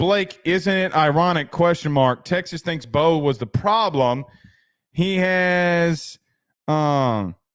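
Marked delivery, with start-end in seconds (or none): none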